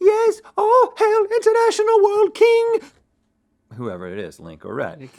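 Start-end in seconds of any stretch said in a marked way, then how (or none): 0.0-2.8 put-on squire voice, very high and loud. Explaining the game's rule for the loser, hailing the winner in a squire voice. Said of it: "In their best squire voice".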